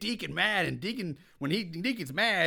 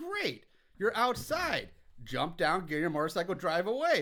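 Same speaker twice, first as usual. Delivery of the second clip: ordinary delivery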